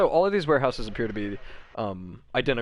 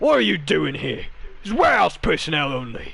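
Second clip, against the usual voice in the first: high, loud, angry voice. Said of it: "marches up to you guys and just goes".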